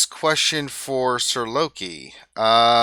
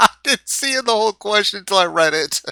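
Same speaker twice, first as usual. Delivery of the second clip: high, loud, helpless laughter. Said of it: "without laughing so much".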